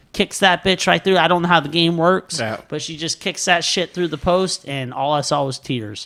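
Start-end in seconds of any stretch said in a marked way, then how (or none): none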